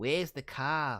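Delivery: put-on Australian accent. Contrasting how Aussies and Kiwis talk, the speaker uses an Australian accent. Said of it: "Aussies are like".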